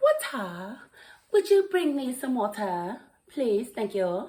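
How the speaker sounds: put-on London English girl's accent. Introducing Zeta, twenty-nine, who is from London, imitating her London English accent. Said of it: "she has that London English accent".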